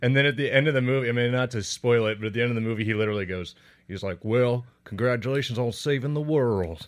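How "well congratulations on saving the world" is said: slow, drawn-out, ridiculous Southern drawl. Retelling a movie's ending, imitating an actor: Jeffrey Dean Morgan Southern drawl. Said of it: "he does this ridiculous Southern drawl".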